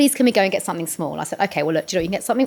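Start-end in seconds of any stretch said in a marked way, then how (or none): 0.0-1.2 mock pleading, begging child voice. A parent retells the kids campaigning to go to the shop, imitating a begging child. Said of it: "so they started campaigning".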